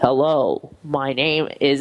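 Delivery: gruff, rough, very deep, low male voice. Retelling the voice heard after the front door opened early one morning: gruff male voice. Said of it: "in this really gruff male voice".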